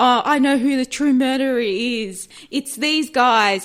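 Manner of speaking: loud yelled tone.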